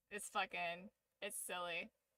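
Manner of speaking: ordinary talk, nothing marked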